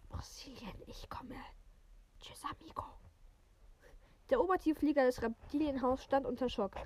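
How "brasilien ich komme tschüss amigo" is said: soft, quiet, whispered serpent hiss. A snake slithers past a boy, in a quiet hissing voice. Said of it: "eine leise, zischende Stimme sagte".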